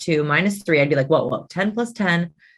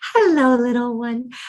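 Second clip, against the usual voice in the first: put-on high-pitched baby-talk voice; 6 semitones higher than usual. Explaining that babies prefer high voices, greeting a baby in high-pitched baby talk. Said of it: "babies prefer high pitched voices. That is why our instinct when we talk to a baby is to go".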